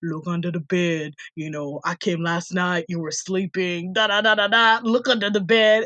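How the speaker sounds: mock deep voice, put on. Retelling a prank call by one of his friends, put-on deep voice. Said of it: "Give me a deep ass voice".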